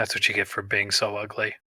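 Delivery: speaking in a whisper. Speaking in character to an enemy who just collapsed: whispering. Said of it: "I'm just gonna whisper".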